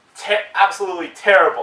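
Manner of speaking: plain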